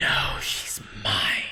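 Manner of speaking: extraordinarily loud, forceful, carrying whisper. A game master gives voice to an unseen speaker, in a loud whisper. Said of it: "extraordinarily loud, but somehow still a whisper".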